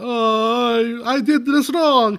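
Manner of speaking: very slow, bad Italian accent with stretched "Oh". Retelling a film scene where the brother fails: Jared Leto's terrible Italian accent. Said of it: "he has this terrible, uh, Italian accent".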